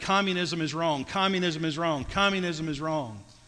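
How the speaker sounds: normal talking voice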